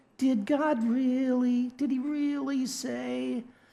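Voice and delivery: poor Southern accent, soft and slow.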